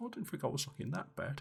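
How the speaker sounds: hushed, very quiet whisper. Describing a man fixing his eyebrows and hair, retelling a whisper. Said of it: "as he kind of whispers".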